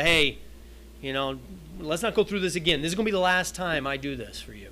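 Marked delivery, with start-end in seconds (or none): none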